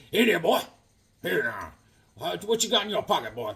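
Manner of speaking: put-on voice of an old cowboy. Acting out an old cowboy at a carnival talking to a boy: old cowboy voice like Sam Elliott. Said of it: "an old cowboy sitting there, like Sam Elliott".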